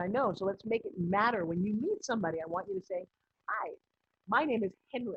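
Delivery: plain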